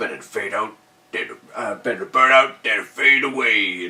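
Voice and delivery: loud, put-on deep resonant voice. Imitating the djinn's line from the film: imitating a real deep voice. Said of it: "it's that real deep sort of voice".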